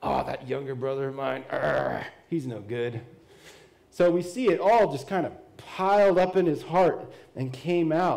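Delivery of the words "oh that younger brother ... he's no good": put-on soft, rough, resentful, hateful bitter grumble. Acting out the older brother's thoughts about his younger brother: imitating a bitter, hateful brother. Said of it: "just a little more hateful".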